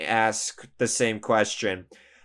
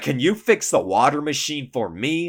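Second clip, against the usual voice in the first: angry, pissed-off, raised voice; 4 semitones higher than usual. Retelling a man repeating his request after being refused, retelling an angry raised voice. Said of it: "he raises his voice and gets pissed off at me".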